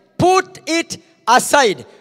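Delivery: slow, deliberate, weighty, emphatic delivery. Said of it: "put it aside (repeated)".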